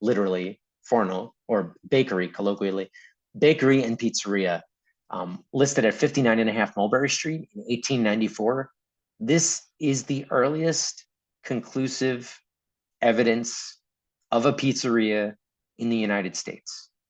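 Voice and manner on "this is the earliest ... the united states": very slow, deliberate, each word weighed. Speaker presenting a key historical finding, said really slowly. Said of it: "I said that really slowly".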